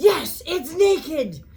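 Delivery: high, loud yell at the top of the lungs. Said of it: "I hear [name] yelling at the top of his lungs".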